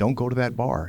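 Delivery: light, lighthearted joking remark. Retelling his reply to a man who wanted to learn to fight, retelling a joking remark. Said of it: "And I jokingly said".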